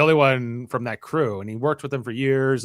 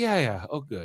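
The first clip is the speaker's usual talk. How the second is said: totally relaxed, unbothered, overly chill laid-back tone; 6 dB quieter than usual. Retelling a scene where Dev answers Danielle: imitating Dev being overly chill. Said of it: "he's overly chill here in this scene".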